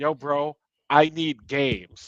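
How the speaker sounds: stretched-out, slow speech. Retelling someone demanding games from a boss: imitating Asha demanding games. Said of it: "Asha goes into Todd Howard's office and says".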